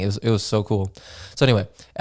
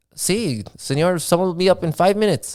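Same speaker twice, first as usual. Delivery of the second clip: put-on Spanish accent, pitched up; 8 semitones higher than usual. Retelling what someone told the speaker after ordering a burger, in a put-on spanish accent. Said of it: "what is the accent?".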